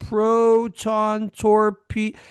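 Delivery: dragged-out, slowed-down talking. Retelling a film scene where slowing time drags the crew's speech; slowed-down drawn-out speech. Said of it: "they're talking like this".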